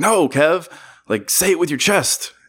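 mock agitated, high-pitched yelling. Retelling a stand-up bit where the uncle yells at Kevin: imitating the uncle yelling. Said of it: "he's yelling at Kevin to do these things".

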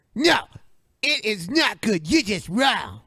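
high, swooping, bouncy put-on character voice. Imitating a friend who says the other is wrong: Cartman voice imitating a friend. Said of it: "why is your default T J voice Cartman?".

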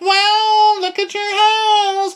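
very high, phony put-on voice, drawn out. Retelling how a guest greeted the host: imitating a high fake voice. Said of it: "she's got her high fake voice".

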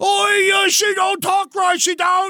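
very high, terrible put-on Cockney accent. Recalling being in the My Fair Lady chorus, doing a bad Cockney accent. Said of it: "my Cockney accent was so bad".

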